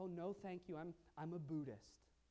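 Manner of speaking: normal talking voice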